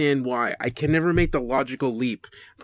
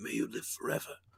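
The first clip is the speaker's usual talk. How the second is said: breathy near-whisper, barely above a whisper; 3 semitones lower, 14 dB quieter than usual. Quoting Leonidas turning to the deformed guy in 300: Gerard Butler impression. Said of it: "don't ask me to do a Gerard Butler impression".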